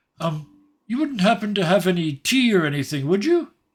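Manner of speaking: very high-pitched, loud yell. Narrating as one of the figures calls after someone walking away: yelling. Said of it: "one of them yells".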